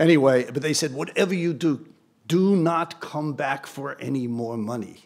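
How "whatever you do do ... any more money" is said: slow, deliberate, put-on Swiss accent. Retelling what they told him after he got the increase, in a Swiss accent. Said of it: "Is that a good Swiss accent?".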